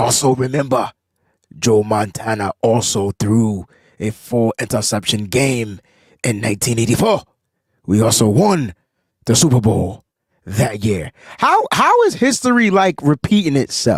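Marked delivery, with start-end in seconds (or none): 0.0-11.1 put-on wise old mentor voice, lower pitch, slower pace. Reading a listener's Facebook comment aloud on the show, in Master Splinter voice. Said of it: "read it in my Master Splinter's voice".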